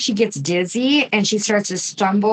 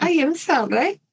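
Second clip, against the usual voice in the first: put-on pitched-up Italian accent; 7 semitones higher than usual. Quoting what she says before swinging the axe, as Leonarda with an Italian accent. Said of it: "should I do that with an Italian accent?".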